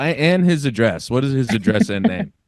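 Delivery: ordinary talk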